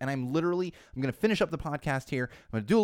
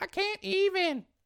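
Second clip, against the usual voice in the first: put-on very high, bad kid voice. Showing what the kids say: terrible kid impression. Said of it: "That's a terrible kid impression".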